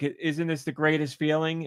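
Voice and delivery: ordinary talk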